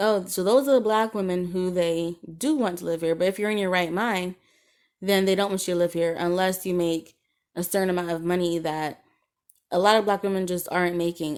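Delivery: ordinary delivery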